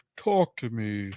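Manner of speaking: really deep, low, creepy, eerie voice. Describing a movie scene where the boy's voice changes: imitating a low, deep creepy voice. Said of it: "the voice gets really low and deep and is like".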